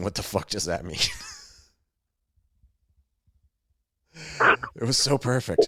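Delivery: words broken up by laughing, talking through laughter. Still laughing at the other speaker's yelling, laughing while talking. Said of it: "I'm still laughing at you yelling".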